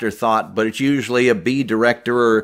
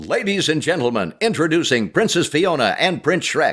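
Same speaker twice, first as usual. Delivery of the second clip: showbiz announcer voice, pitched up; 6 semitones higher than usual. Retelling a line once voiced as an announcer in a movie: announcer voice. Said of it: "I did an announcer".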